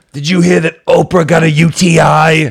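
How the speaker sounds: high, loud, slow, drawn-out delivery. Gossiping in a joking segment: Joan Rivers voice. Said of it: "We both just wanna do the Joan Rivers voice".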